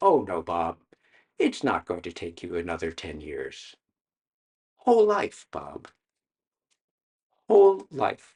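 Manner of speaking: gentle, soft-spoken tone.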